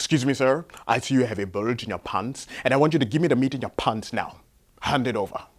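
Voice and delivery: put-on heavy, thick Nigerian English accent. Retelling how Frank finally confronted the guy, thick Nigerian accent. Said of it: "Frank had a very thick accent. He was from Nigeria".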